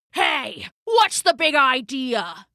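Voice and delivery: angry snarling growl. Narrator reading the wolf's line as he bursts out of the trees, growled. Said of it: "he growled".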